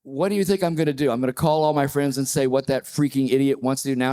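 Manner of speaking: usual speaking voice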